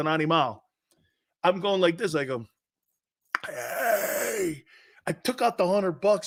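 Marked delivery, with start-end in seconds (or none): 3.5-4.6 mock whispered, breathy shout. Retelling yelling at a referee: imitating his own yelling. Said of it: "I was a maniac".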